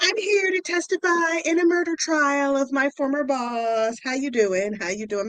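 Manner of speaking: chummy, jovial, cheery tone. Retelling how a witness greeted the court: imitating a jovial witness. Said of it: "I'ma need you to be a little bit less jovial".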